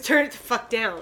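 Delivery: ordinary delivery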